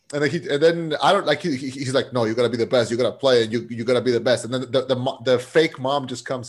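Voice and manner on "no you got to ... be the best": put-on scolding dad voice. Retelling a movie scene where a dad scolds his children: imitating scolding. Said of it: "he's scolding his children".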